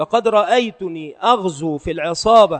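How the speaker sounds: ordinary delivery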